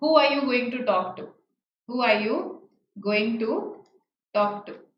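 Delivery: plain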